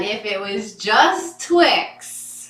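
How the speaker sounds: slow, loud, mocking, teasing voice, dragged out. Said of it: "He said that".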